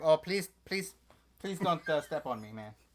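high, begging, pleading tiny dog voice. Voicing a tiny dog looking up, afraid of being stepped on: imitating a pleading dog. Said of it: "He's looking at me like".

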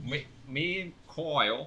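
fake, put-on Cockney accent. Telling about the week when asked to use a Cockney accent: put-on Cockney accent. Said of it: "That's perfect, honestly".

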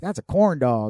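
talking like a cowboy. Retelling how a schoolmate said a line: imitating a cowboy-like drawl. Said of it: "he talked like a cowboy".

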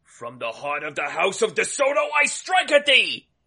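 ringing, soaring, yelled battle cry. Attacking with a cricket bat in the game: yelling battle cry. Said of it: "I cue it up and I yell".

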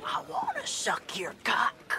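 put-on whispered with Finnish accent. Retelling what a Finnish man whispered to the speaker one night: whispered Finnish accent. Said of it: "whispers in his in his Finland accent".

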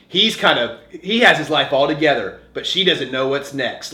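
plain

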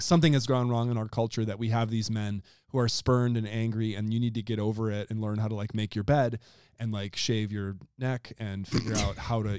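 ordinary talk

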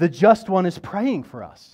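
yelling loudly.

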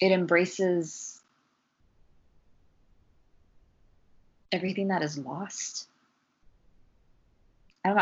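voice catching, slightly choked up. Reflecting on how a word has been distorted, a little choked up. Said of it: "I kind of get a little bit choked up".

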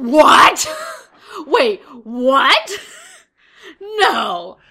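loud, shouted, shocked disbelief.

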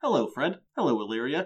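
stiff, graceless, as awkward as possible. Retelling how Angel greets Fred and Illyria: awkward Angel impression. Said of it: "in the most awkward way possible".

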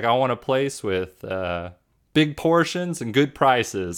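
put-on fake American accent. Quoting a character talking to the bellboy: [name]'s put-on American accent. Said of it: "an American accent, which [name] does".

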